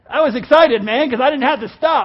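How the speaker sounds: loud, laughing, joyful excitement.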